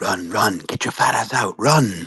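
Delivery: whispering. Casting a spell at a vile beast in a game: whispering in character. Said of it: "can I start whispering some words towards it?".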